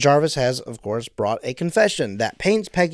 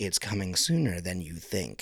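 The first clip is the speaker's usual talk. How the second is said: very quiet, low, hushed mutter under the breath; 5 semitones lower, 10 dB quieter than usual. Retelling a scene, muttering a character's line under the breath. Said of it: "under her breath is like".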